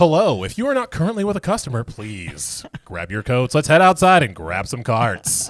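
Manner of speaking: loud, sing-song intercom announcer voice. Recalling doing announcements over the intercom at his Home Depot job, store PA announcement voice. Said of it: "I would be like".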